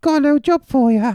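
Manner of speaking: goofy, silly disguised put-on voice, very high-pitched. Speaking in disguise to someone who asks who it is, silly put-on voice. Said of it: "That's a fucking silly voice".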